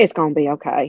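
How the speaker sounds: put-on western cowboy-style accent. Imitating a man who has picked up a new accent: Wild Wild West accent. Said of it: "He sounds like he's from like the Wild Wild West".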